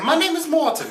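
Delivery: very high, kind-of-British voice. Imitating how the director says his name: Morten Tyldum impression. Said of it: "So he's like".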